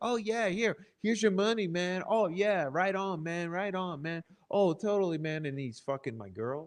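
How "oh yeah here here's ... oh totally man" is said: smooth, easygoing slick-dude patter, pitched up. Retelling how slick dudes at music gigs greeted people: imitating slick dudes. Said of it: "they're like".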